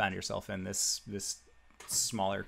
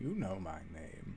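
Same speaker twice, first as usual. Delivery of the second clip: soft-spoken, lower and quieter; 4 semitones lower, 9 dB quieter than usual. Speaking as a voice inside a player's head: speaking very quietly. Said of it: "I was just speaking very quietly".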